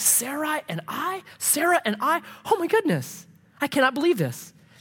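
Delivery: put-on very high, childlike, giddy, drawn out, acted. Acting out Abram, who has been allowed to dream again: imitating Abram, giddy. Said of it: "he's giddy. He's almost, like, childlike".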